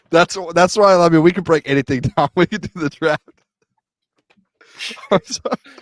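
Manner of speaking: loud, high-pitched talking through laughter. Answering a question among friends, laughing while talking. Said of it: "What are you laughing at, [name]?".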